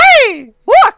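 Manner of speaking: loud, very high squeaky cry. Trying out impressions with friends, Mickey Mouse voice. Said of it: "all my impressions revert to Mickey Mouse".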